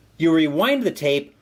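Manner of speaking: ordinary delivery, nothing marked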